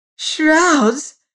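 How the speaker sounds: shrill, very high shrieking cry. A woman falling back onto her pillow cries out one word, shrieking. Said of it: "Shrieked Mrs".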